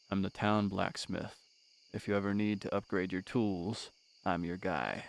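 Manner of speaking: very quiet, low, soft, self-effacing monotone voice. Voicing the town blacksmith character Clint, in a low, monotonous, soft-spoken Clint voice. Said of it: "very low, monotonous, soft-spoken".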